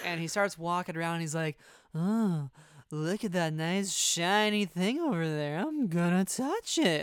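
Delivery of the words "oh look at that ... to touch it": put-on slow, tipsy, wandering drunken voice. Imagining a character after too many vodka tonics at a party, drunk Kaz voice. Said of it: "what I imagine Kaz sounds like after too many vodka tonics".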